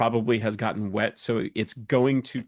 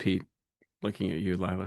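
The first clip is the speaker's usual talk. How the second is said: plain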